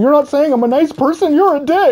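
very high, tearful, blubbering crying whine. Retelling a guy's reaction after being refused some, imitating a man crying. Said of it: "then he starts crying".

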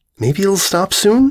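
gently hopeful tone. Narrator reading the purple one's suggestion as the sun sets, hopeful. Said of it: "the purple hopefully suggested".

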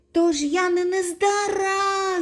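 hopeful through tears, high and slow. Toni, wiping away his tears, asks his father, asking hopefully. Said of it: "з надією запитав Тоні, витираючи сльози".

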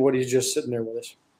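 ordinary delivery

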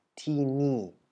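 tini, two falling tones, each syllable falling. Explaining the spelling of Thai syllables: falling tone on both syllables of Tini. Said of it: "zweimal im fallenden Ton gesprochen wird".

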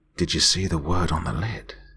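quiet, soft-spoken, hushed voice. The physicist speaks up to the narrator: quietly. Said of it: "he asked quietly".

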